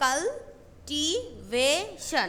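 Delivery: very slow cultivation, broken syllable by syllable.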